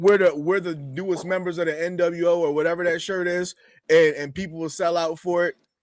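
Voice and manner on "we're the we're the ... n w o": ordinary talk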